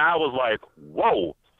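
plain

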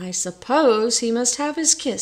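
plain

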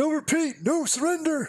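very high, declaring delivery. Commentating a match as a player holds out: Lost Souls impression. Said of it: "That was my Lost Souls impression".

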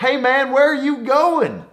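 mock very high, hollered-out yell. Retelling a driver in a truck calling out while riding up a mountain: imitating someone yelling. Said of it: "he yells out at me and he goes".

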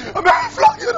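outraged, very high shouted cry.

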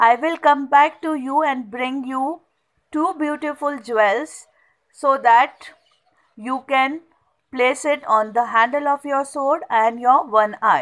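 plain

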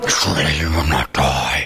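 very low, massive, rumbling demonic voice. Explaining a Bible passage, voicing the serpent's words in Nahash's massive demonic voice. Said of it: "in this massive, I mean, this, you know, demonic voice".

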